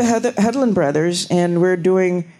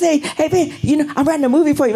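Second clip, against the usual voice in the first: fast-talking, worked-up chatter, rattled off; 9 semitones higher than usual. Retelling Quentin's first approach in traffic, imitating Quentin's fast talking. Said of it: "you know how fast he talked".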